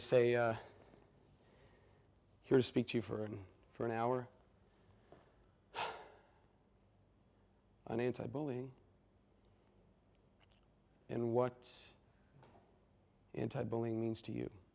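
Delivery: put-on very quiet, low, flat, dull, boring drone. Retelling his own talk to a crowd, imitating a boring delivery. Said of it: "and I'm still doing it boring".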